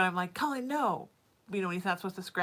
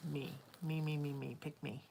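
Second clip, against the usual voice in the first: soft, slow, tiny little voice; 5 semitones lower, 9 dB quieter than usual. Sorting through fostered dolls, the speaker hears one call out; small little voice. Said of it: "I heard this little voice say".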